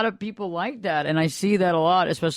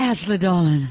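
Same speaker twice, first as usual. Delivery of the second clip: put-on Southern belle accent; 4 dB louder than usual. Praising a friend's Southern accent, then demonstrating a Scarlett O'Hara Southern belle voice. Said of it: "Belle of the County".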